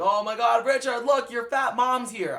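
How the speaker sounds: high, loud, jeering mocking yell with a laugh. Retelling a bully's taunt when mom arrived: imitating a mocking yell. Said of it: "literally yelled, like, laughing at my mom".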